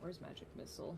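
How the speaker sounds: soft unvoiced whisper under the breath.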